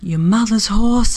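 hushed, quiet whispered voice. The narrator answers the companion clinging to her at the stream's edge, whispering. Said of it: "I whispered".

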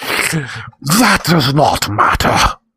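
grunting, rasping demon voice, high pitch. Narrator reads the toad-headed demon speaking to the boy, rasping, grunting demon. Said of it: "the demon rasped and grunted".

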